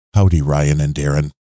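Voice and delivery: smooth public-radio announcer voice. Reading a podcast promo aloud, asked for a mellifluous NPR delivery. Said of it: "He doesn't want the shouty voice. He wants more the NPR delivery".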